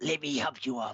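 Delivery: hissed, creature-like undead voice. Voicing an undead creature as it speaks to another character, hissing. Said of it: "It hisses to Aragon".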